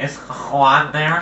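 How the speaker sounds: slow, muffled, barely talking voice. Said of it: "kinda sounded like you with a muffled voice".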